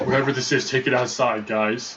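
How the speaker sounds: ordinary delivery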